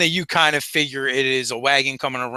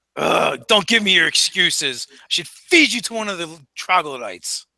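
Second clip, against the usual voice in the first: irritated, angry, scolding voice; 4 semitones higher than usual. Voicing the boss replying to a subordinate, in an angry voice. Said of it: "the more angry sounding voice".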